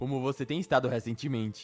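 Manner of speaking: ordinary talk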